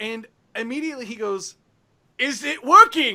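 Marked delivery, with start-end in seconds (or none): 2.2-3.2 all-out, very loud screaming call. Voicing Zephyros who screams in the players' heads: screaming in a character voice. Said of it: "Zephyros screaming in your heads".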